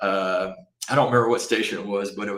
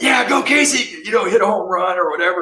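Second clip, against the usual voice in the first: high-pitched, encouraging cheering scream; 10 semitones higher, 8 dB louder than usual. Retelling cheering for a son at a baseball game: imitating own screaming.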